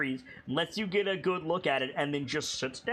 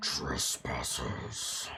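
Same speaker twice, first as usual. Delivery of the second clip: strained throaty monster voice, lower; 4 dB quieter than usual. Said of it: "you doing that voice today".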